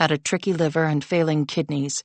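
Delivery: ordinary delivery, nothing marked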